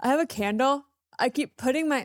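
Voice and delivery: speaking through a yawn. Recording a podcast with the other host, yawning while talking. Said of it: "Are you yawning on air?".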